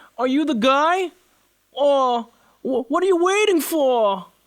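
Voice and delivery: voice pushed up into the nose. Recalling a voice he once did, in a high nasal voice. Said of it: "Talking like that, carrying more of the voice into my into my nose, speaking from the nose".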